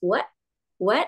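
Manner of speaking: short, startled "what". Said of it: "kita seolah-olah kaget".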